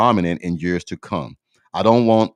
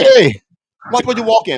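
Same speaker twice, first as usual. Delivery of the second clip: put-on very high, animated, swooping New Jersey accent; 7 dB louder than usual. Quoting a coworker from new jersey, new jersey guy impression. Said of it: "a guy that's from New Jersey".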